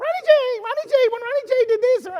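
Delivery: very high, loud squeaky voice. A former quarterback recalls his coach friend calling to him, in Herm's little squeaky voice. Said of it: "He had that little squeaky little voice".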